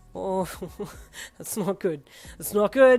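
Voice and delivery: laughing while talking. Reading a story aloud, a character laughs at a surprise: laughing while talking. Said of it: "you laughed".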